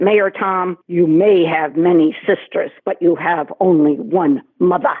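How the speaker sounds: put-on Boston-accented delivery. Retelling what John Sears said to the mayor, in John Sears's Boston accent. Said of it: "said in his Boston accent".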